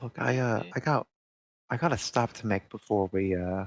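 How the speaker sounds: whispered in a character voice. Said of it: "He's whispering".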